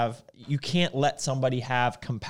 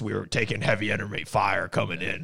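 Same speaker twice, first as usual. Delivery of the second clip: low, tough, badass narrator voice; 5 semitones lower than usual. Praising the audiobook narrator's voice: imitating Grogan's voice. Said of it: "he talks like this".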